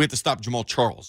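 usual speaking voice

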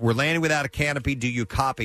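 usual speaking voice

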